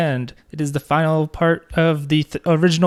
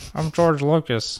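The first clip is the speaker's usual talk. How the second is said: really bad, nerdy voice; 5 dB quieter than usual. Imitating a filmmaker rejecting the Grey Jedi idea: bad George Lucas impression. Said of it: "it's a really bad George Lucas".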